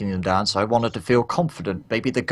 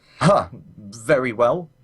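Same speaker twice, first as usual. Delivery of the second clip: faltering, halting words with a slight stammer. Voicing a wildling who takes an offered sword, with a slight stammer. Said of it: "a little bit of a stammer in his voice".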